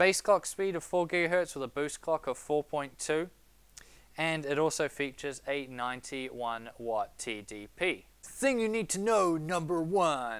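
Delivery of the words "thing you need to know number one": epic announcer voice, much higher pitched. Tech reviewer describing a new processor, in an epic announcer voice. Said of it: "that's my epic voice".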